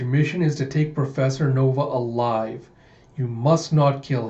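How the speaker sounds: normal talking voice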